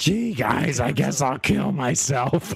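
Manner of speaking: slow, drawn-out puppet voice. Doing a Gonzo impression after naming him: Gonzo voice. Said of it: "What about Gonzo?".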